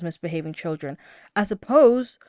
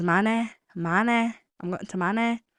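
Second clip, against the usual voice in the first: drawn-out Manchester way of talking. Imitating how H from Manchester says it: imitating H's Manchester accent. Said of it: "he says".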